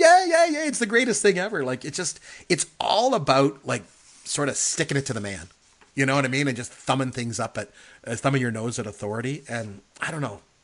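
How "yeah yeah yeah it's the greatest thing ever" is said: very high, rowdy, acted crowd cheering, whooping. Retelling how all the men join in: imitating men cheering.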